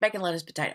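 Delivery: rattled off very fast, rushed and run together. Quoting how she said the sandwich name so nobody notices: rattled off very fast. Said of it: "she was saying it like real fast".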